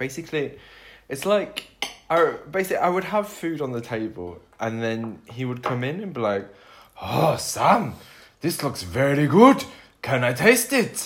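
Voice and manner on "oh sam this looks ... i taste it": put-on loud, sing-song failed Swedish accent. Speaker imitating a Swede who came in when she had food out, attempted Swedish accent. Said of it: "That's not a Swedish accent".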